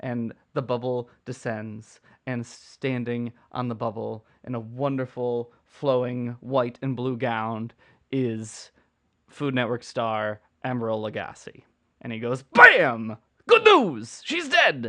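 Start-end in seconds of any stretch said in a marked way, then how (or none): 12.4-14.9 belted high singing, wild swoops. Playing the Food Network star as Glinda, descending on a bubble, do an Emeril Lagasse impression. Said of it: "It's my Emeril impression".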